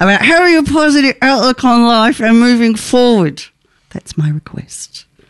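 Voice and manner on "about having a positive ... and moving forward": words forced through a clenched jaw, gritted teeth. Reading someone's written request aloud, through gritted teeth. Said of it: "I'm going to read this with gritted teeth".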